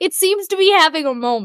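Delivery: fighting off the giggles. Speaker trying to stop laughing mid-sentence, holding back a laugh. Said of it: "I can't laugh. Stop laughing now".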